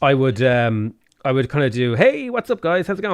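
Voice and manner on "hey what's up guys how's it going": upbeat, higher-pitched intro-style voice. A YouTuber shows how they greeted viewers when first starting out: higher-pitched, more upbeat voice. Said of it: "in like a higher pitched".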